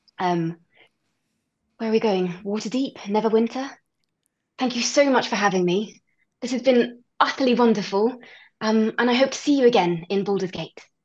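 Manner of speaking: put-on English accent, carefully articulated. A guest, in character, says goodbye to the host: English accent. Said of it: "into the right place for this English accent".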